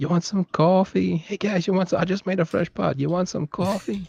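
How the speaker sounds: put-on Long Island accent. Telling someone about a meme video guy, doing a Long Island accent impression. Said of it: "Whenever I hear the Long Island accent".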